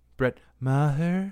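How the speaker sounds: cartoon baby character voice. Repeating a player's name after the other host, in a Stewie voice. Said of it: "It's my best Stewie voice".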